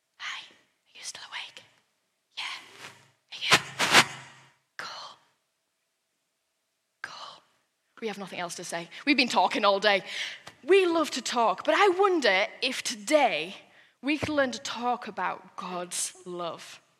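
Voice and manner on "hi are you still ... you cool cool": soft, unvoiced whisper. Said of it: "we'll still be whispering".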